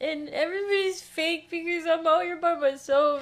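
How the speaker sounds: tearful voice. Retelling being thrown out on a birthday night, acting out past crying. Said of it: "so I'm crying".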